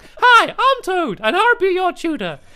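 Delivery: cartoon character voice like a famous cartoon mouse. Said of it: "I sound like Mickey Mouse".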